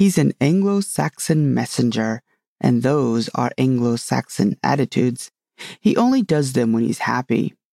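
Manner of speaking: ordinary delivery, nothing marked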